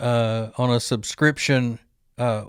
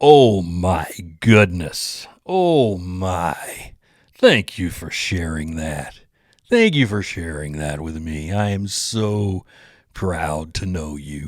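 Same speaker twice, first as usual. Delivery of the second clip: slower, put-on, imitated sweet man's voice; 6 semitones lower than usual. Telling about a sweet man who loves everything, imitating a sweet man's voice. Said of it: "he's got a great voice, and he'll go".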